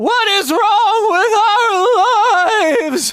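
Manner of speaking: very high, compressed, drawn-out scream, voice cracking. Demonstrating how to coax the voice toward a yell, voice cracking on high pitch. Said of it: "That I'm going to crack a lot on".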